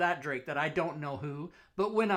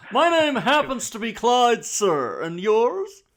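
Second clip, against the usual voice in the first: very loud, slow, drawn-out, high-pitched booming drawl; 6 semitones higher, 10 dB louder than usual. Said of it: "talks like Thurston Howell the third".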